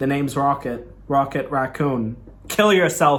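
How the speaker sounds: normal talking voice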